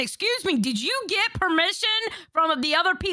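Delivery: angry, accusing, confrontational telling-off tone. Retelling confronting a woman who recorded the Discord voice chat: mock angry scolding. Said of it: "I started laying into her going".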